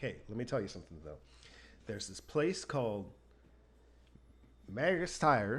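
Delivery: broadest Georgia drawl, heavily put on. Retelling a tire seller pointing her to another shop; imitating a deep Georgia accent. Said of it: "in like his deepest Georgian accent".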